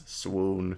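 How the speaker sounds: very low, quiet, hushed, flat deadpan monotone. Reading a line from a card aloud: deadpan monotone "swoon". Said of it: "my deadpan monotone voice".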